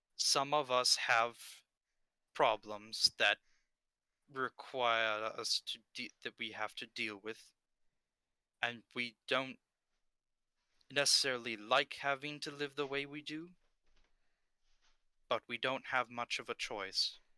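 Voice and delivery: private, hushed secret whisper. A game character speaks so only one player can hear: whisper only one person hears. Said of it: "he's talking in a voice whisper that only you can hear".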